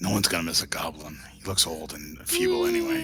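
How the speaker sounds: hushed whispering voice. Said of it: "That's why I'm whispering".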